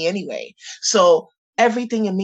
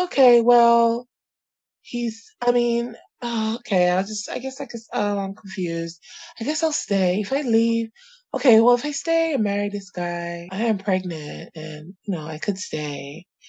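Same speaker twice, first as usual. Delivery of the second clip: put-on confused airhead self-talk, pitched higher; 4 semitones higher than usual. Retelling how the speaker talked themself into accepting an offer: imitating own airhead thinking. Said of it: "thinking like an airhead".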